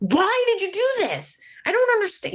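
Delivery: very high, swooping, furious outburst. Recounting being told to help Gabby, retelling an angry outburst. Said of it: "And I'm like mad, angry, mad".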